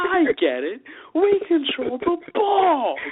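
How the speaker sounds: high, slow, heavy stress on we control the balls. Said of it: "you can really hear him just".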